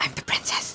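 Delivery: hushed, breathy, confiding whisper. Voicing a character who whispers to a companion: whispering in character. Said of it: "she's gonna whisper to Gork".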